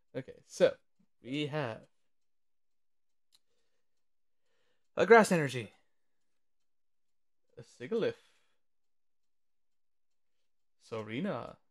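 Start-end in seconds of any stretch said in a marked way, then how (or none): 1.2-11.5 slower, drawn-out announcer voice. Opening a card pack and naming each card, in a Smash Brothers announcer voice. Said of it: "I'm just turning into like a Smash Brothers announcer".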